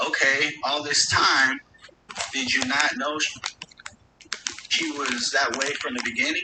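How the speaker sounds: normal talking voice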